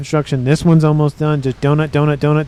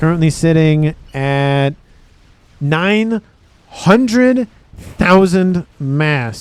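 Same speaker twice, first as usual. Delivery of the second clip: very slow, drawn-out, halting, breaking mid-phrase. Commentating a game, stating the current reclaim total on the map, very slow. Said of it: "I say that very slowly".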